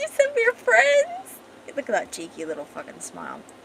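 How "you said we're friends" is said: high, slow, drawn-out teasing voice. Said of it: "She's like".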